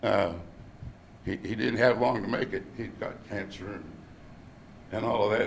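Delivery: choked-up voice breaking and catching with emotion. Recalling a phone call with a dying man who saved his life: choking up. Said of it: "I'm choking up now".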